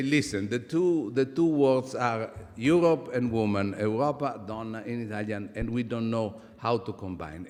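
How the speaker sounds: ordinary talk, nothing marked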